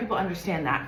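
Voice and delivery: ordinary talk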